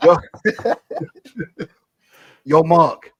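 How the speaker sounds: very loud, swooping put-on New York accent. Speaker shows the others an accent worked on since Christmas: Dom accent. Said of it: "Dom accent".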